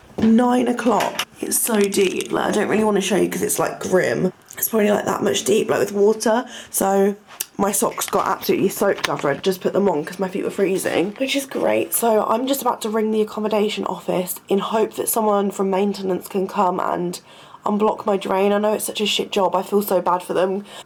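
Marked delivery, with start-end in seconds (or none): 0.2-1.3 nine stressed, hit high and loud.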